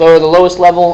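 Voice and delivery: ordinary delivery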